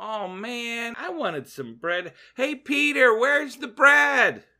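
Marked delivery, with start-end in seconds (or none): 2.3-4.3 loud, high-pitched calling out. Imagining a man searching the boat for bread, acting out his yell. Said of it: "Maybe he yells out".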